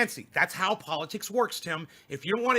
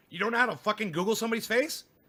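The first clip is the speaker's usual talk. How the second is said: usual speaking voice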